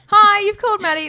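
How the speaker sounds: very high-pitched, very loud voice. Demonstrating one's voicemail greeting to the others, high voicemail voice. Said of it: "I go high".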